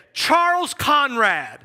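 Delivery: loud, play-acted fatherly yell. Speaker imagines his dad yelling his name at him, imitating dad yelling. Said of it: "if my dad yelled at me right now and said".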